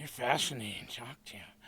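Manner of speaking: breathy, heavy-breathing speech. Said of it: "She started breathing a little heavy".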